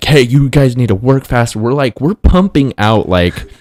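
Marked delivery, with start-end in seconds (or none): 0.0-1.6 put-on scream, higher. Retelling the boss coming out to hurry workers: imitating boss screaming. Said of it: "screaming at us".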